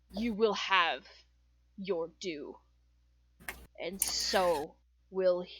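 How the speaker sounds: low, deep, rasping, gravelly character voice. Voicing a war priest answering a wizard's counterspell: deeper, gravelier voice. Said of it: "His voice is deeper, gravelier".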